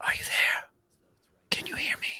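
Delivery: soft, close whisper, as if right beside you. Game master voicing a voice that Trazu hears right beside them, soft voice. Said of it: "a voice, soft, as though it's right beside you".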